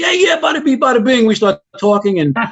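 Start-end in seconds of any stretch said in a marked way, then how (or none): 0.0-1.2 obvious put-on New York accent, very high. Retelling meeting a recruiter from New York: imitating a New York accent. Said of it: "the accent was pretty obvious".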